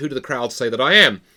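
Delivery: ordinary talk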